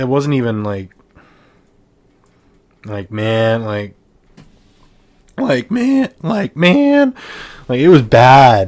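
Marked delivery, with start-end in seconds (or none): 5.4-8.7 loud, halting, cracking voice, stumbling mid-phrase. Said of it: "Sorry for the voice crack".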